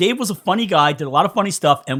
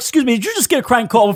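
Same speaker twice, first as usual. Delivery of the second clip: furious, angry, outraged voice, pitched up; 8 semitones higher than usual. Retelling a crank call, imitating Dave posing as a father. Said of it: "pretend to be the guy's father".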